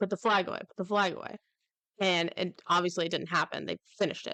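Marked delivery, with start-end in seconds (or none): none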